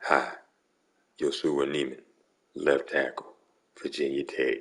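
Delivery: forced, put-on deep bass voice. Mimicking a football player's introduction: put-on deep bass voice. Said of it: "See if I can get some bass in my voice here".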